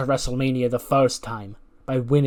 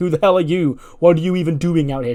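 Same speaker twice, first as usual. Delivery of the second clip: mock loud, confronting, yelled shout; 4 semitones higher, 6 dB louder than usual. Retelling a wrestler shouting at another wrestler: imitating someone shouting. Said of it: "she starts shouting at".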